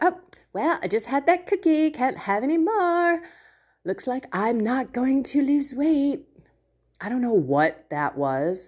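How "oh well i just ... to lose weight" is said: put-on clumsy, bad London valley-girl accent. The speaker redoes an earlier remark of their own: bad UK valley girl voice. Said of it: "my bad imitations of a valley girl in London".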